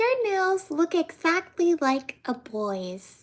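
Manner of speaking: put-on high, sweet, innocent little-girl voice. Retelling a little girl at church commenting on the speaker's nails, mock sweet, innocent voice. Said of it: "in this very sweet, innocent voice".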